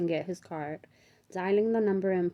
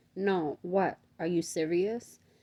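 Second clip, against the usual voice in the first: ordinary delivery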